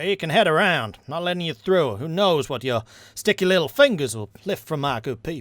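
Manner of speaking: put-on Southern accent. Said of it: "It was Southern".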